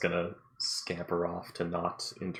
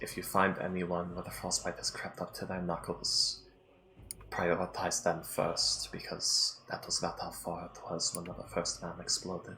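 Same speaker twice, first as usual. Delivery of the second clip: stage whisper held throughout. Passing on a word of advice to the group, half-whispering it. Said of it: "that's why I'm whispering it".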